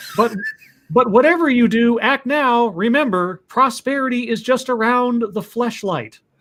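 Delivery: high, put-on radio ad announcer voice. Reading a Mad Lib aloud in a put-on commercial announcer voice. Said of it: "That sounded like a legitimate commer-".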